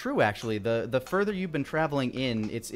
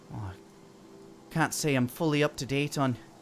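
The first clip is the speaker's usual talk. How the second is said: ordinary delivery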